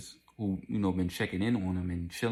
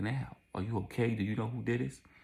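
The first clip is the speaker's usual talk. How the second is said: phony, fake-sweet, concerned-sounding put-on niceness; 4 semitones higher than usual. Retelling an officer pretending to be kind: imitating fake niceness. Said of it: "play it off like if he was talking to her some nice shit".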